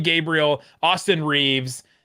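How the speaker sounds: normal talking voice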